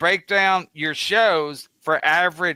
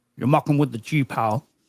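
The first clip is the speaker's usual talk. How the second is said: put-on, movie-style Scottish accent; 3 semitones lower than usual. Doing an Untouchables line, trying for a Connery impression. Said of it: "I was trying to do Connery".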